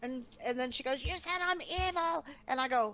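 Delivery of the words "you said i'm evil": high, drawn-out scream with an accusing tone. Retelling an argument, the speaker acts out a woman's words, imitating someone screaming. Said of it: "started screaming".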